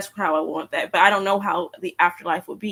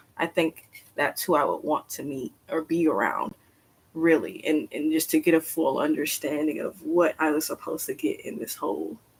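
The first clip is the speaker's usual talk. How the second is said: soft, choked-up voice on the verge of crying; 3 semitones lower, 5 dB quieter than usual. Speaker describing who they would want to meet and be around: about to cry. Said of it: "I'm about to cry now".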